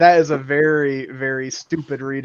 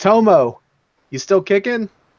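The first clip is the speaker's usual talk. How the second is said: high, loud calling-out yell; 6 semitones higher, 4 dB louder than usual. In a tabletop game, calling from outside the door into the chamber, yelling. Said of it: "yell in there".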